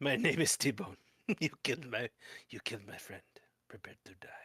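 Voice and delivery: whispering quietly to oneself. Player voicing his character, facing the Lich who killed his friend, whispering to himself. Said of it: "going to just whisper to himself".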